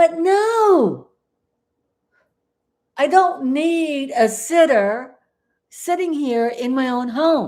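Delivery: high, carried-away yelling, drawn-out "no". Host of her own YouTube show talks to viewers, yelling. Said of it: "Oh, I'm yelling".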